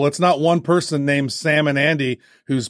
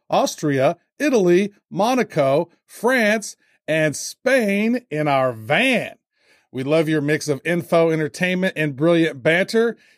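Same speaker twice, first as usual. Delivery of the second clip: usual speaking voice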